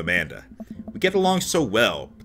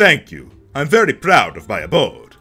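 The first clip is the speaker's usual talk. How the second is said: loud, laid-on, put-on vampire voice; 7 dB louder than usual. Voicing a character in a roleplay, in a vampire voice. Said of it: "I'm just giving him a vampire voice".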